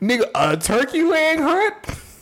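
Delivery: high, slow, mock incredulous tone.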